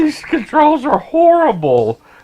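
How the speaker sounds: high, loud, slow, whiny mock disgust. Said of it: "now I'm like".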